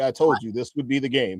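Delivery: put-on sarcastic tone. Repeating a claim about the game to another speaker: putting on sarcasm.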